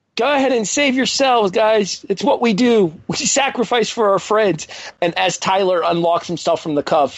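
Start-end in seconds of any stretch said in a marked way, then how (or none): 0.2-4.7 acted-out calling out, yelling. Quote what a man in a wrestling show yelled to the others, imitating someone yelling out. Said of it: "was Connor yelling out".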